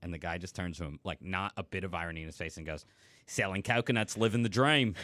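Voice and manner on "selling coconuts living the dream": put-on Aussie, Australian accent. Retelling a street coconut seller's reply to the speaker's roommate, in an Australian accent. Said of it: "I got to tell my Australian accent joke".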